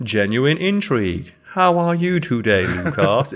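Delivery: put-on alien voice, slow pace. Imitating an Elcor, whose speech is described as super slow: slow Elcor speech. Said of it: "Their speech is super slow".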